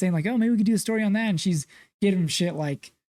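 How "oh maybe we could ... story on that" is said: put-on excited, high, eager pitch. Retelling a film scene where the photographer pitches a story: imitating an excited suggestion. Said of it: "he's real excited about it".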